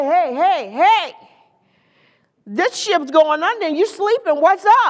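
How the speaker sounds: mock urgent, casual, slangy street talk. Retelling the disciples waking Jesus in the storm: casual slangy retelling of panicked disciples. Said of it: "That's how I said it".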